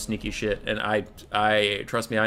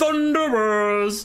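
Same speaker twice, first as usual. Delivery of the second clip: loud hollered shout, pitched way up; 12 semitones higher, 5 dB louder than usual. Imitating a favourite unit's click voice line: imitating the Thunderer dwarf voice line. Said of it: "I can't do it because I'm not barrel-chested and badass like the dwarven voice actors".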